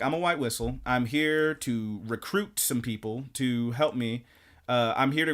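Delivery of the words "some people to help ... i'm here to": ordinary talk, nothing marked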